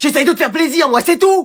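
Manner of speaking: loud, high, forceful voice. Arguing about what to eat tonight, the speaker replies in a loud voice. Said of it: "ne crie pas trop".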